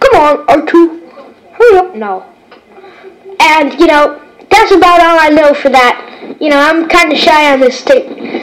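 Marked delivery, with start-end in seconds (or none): 0.0-1.9 robot-like droid voice. Recording a tape of Star Wars imitations, in C-3PO voice. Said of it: "And C-3PO".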